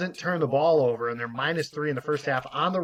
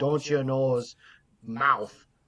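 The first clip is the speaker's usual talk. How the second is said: attempted Minnesota accent; 2 semitones lower than usual. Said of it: "if that's a Minnesota accent or not".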